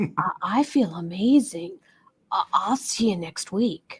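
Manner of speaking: spoken softly. Retelling what men said after their first yoga session: imitating someone speaking quietly. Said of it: "they would come up to me very quietly and say".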